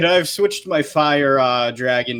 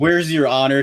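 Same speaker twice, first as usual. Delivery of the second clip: ordinary talk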